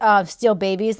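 normal talking voice

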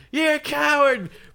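very high, shrill, loud screaming outburst. Retelling a film scene where a man screams at Bobby; retelling a scream. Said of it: "he's screaming at Bobby".

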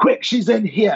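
put-on vague, very high-pitched, possibly South African accent. Retelling what a man said, in a possibly south african accent. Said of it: "like a South African or accent or something".

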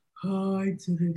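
low, soft baritone attempting sultry, not actually sexy. Asked if they're doing their sultry voice, the speaker demonstrates a baritone sultry voice. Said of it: "why does my sultry voice sound a little bit like baritone".

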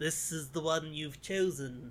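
put-on speech through gritted teeth. Retelling a character's line from a scene in a show, through gritted teeth. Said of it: "He's saying it through gritted teeth".

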